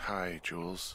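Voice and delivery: weary, sleepy, just-woken tired voice. Just woken to answer the radio, greeting the caller: tired voice. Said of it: "you sound tired".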